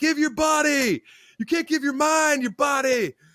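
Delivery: very high scream, yelled out. Retelling how an intense man yelled while opening a gate: imitating a man screaming. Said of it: "he's screaming, say, yell".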